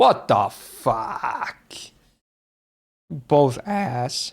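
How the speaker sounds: voice breaking and cracking mid-line on outburst. Comparing foods and their prices out loud, voice cracking. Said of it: "Voice crack".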